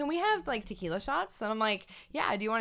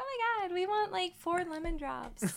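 put-on excited girly voice, pitched up high; 8 semitones higher, 6 dB quieter than usual. Describing groups of women buying drinks, imitating women ordering drinks. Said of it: "That was the best impression of a woman that I've ever heard".

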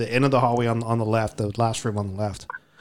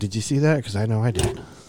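mock whisper, imitated hushed voice. Retelling what was whispered after seeing someone walk through: retelling a whisper. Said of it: "I whispered to Shotzi".

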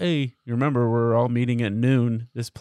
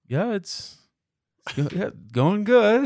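put-on very high, awkward, uncomfortable tone; 10 semitones higher than usual. Retelling being greeted by an unknown man on the dad's side, the speaker replies: mock-awkward reply.

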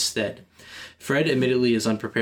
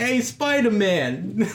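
mock New York accent, higher pitch; 11 semitones higher than usual. Imitating New Yorkers from Spider-Man movies: imitating a New York accent. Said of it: "They're like".

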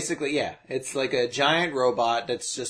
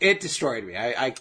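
usual speaking voice

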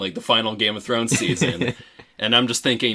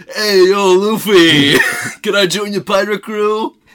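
very high, loud, heavy-smoker voice; 10 semitones higher, 8 dB louder than usual. Mocking how a dub actor approached the role: Sanji voice, mock heavy smoker. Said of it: "50 packs later".

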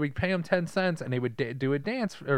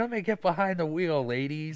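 put-on voice of a drunk man; 3 semitones higher than usual. Retelling a movie scene where he is still drunk: imitating a drunk man. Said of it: "he's still probably drunk".

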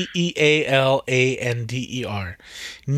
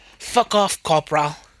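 terrible, bad put-on New Zealand accent; 2 semitones higher than usual. Imitating how a character from New Zealand talks: imitating a New Zealand accent. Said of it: "But she talks like this".

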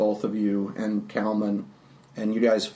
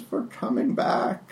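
put-on old woman voice; 3 semitones higher than usual. Voicing the old woman who welcomes the party back: Baba Ganoush voice. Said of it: "a Baba-ish".

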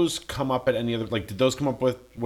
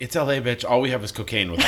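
normal talking voice

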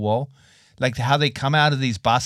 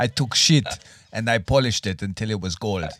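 put-on Russian accent; 2 semitones lower than usual. A host imagines talking to the kids as a rich dad: mock Russian accent. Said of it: "I do not know why I have a Russian accent".

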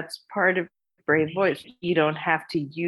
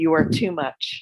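ordinary delivery

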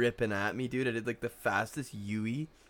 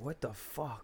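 mock-furious outburst, hushed; 2 semitones higher, 9 dB quieter than usual. Speaker recalls his dad getting out of the car after nearly hitting her, mock-furious outburst. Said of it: "I never saw him like that pissed".

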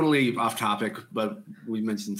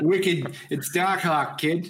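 heavy, thick Boston accent, pitched up; 7 semitones higher than usual. Asked how to pronounce a name, a speaker from boston answers in a thick boston accent. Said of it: "I'm from Boston".

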